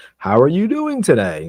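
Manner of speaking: rising inflection. Explaining tone, playing a cashier greeting a customer: rising inflection. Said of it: "it starts to like just angle up".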